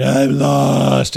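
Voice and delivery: ragged, loud, rough, tearful scream, drawn out. Retelling being lost and crying as a kid: imitating a scream.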